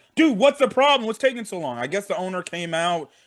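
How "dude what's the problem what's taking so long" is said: high, rushed coach-style sideline screaming. Describing a man on the sideline yelling at the medical staff, retelling a scream. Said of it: "you know he's screaming at the freaking um".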